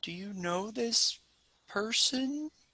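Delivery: high, slow, unhurried talking-tree voice. Voicing a tree that answers a plant-speaking spell: talking tree voice. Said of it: "and it says".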